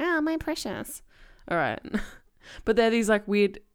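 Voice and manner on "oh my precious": very high-pitched, creepy creature voice. Talking about a Pokemon run with a team of Smeagles, doing a Smeagol voice. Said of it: "That's your Smeagol, is it?".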